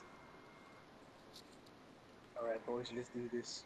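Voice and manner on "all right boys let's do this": low, soft, creepy voice. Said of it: "I thought creepy was like this".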